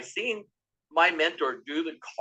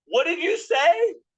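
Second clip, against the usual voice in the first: shrill, very high-pitched screaming; 13 semitones higher, 6 dB louder than usual. Retelling a conversation, screaming a question back at him: retelling own screaming. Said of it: "I just started screaming at him".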